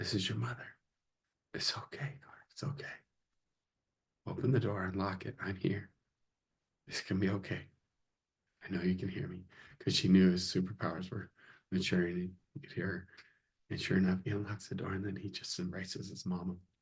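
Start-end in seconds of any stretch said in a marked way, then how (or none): 0.0-9.4 much quieter, soft whisper. Retelling a mother speaking to her son through a locked door, quiet whisper. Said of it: "She's just whispering really quiet".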